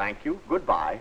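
pleasant, unhurried voice.

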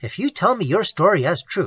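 plain reading voice

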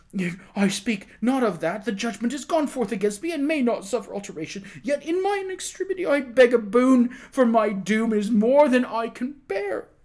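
high, broken, terrified, despairing pleading. A condemned prisoner appeals to the king for mercy, imploring in broken, terrified phrases. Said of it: "The prisoner clapped his hands together with sudden energy and wrung them despairingly at the same time, appealing imploringly to the king in broken and terrified phrases".

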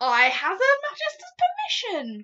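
very loud, rising, swooping exclamation. Asked by the Queen to play something, he cries out. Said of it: "cried the BFG".

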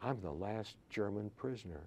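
barely audible, very quiet, hushed voice. Recounting a phone call, the speaker repeats a caller's words in a very quiet voice. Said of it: "in a very quiet voice".

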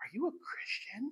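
very slow, hushed, barely voiced whisper. Retelling how a coworker asked a question: imitating a coworker whispering. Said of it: "kinda whispered to me".

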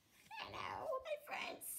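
very quiet, soft, breathy whispered character voice. Introducing toy figures one by one, answering as Toad: Toad voice. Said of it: "And say hello to Toad".

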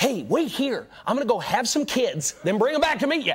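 high-pitched, eager, pushy voice. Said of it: "they'll say something like".

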